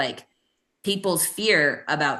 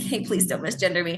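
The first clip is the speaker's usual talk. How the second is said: breezy, playful, jokey acted-out delivery. Retelling own past words to someone who misgendered, imitating own jokey tone. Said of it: "jokey in my".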